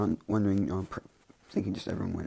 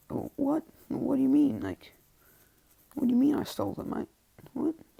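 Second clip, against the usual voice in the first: mock very high, swooping, baffled voice; 4 dB louder than usual. Acting out a character accused of stealing files: put-on confused voice. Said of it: "He's, like, confused".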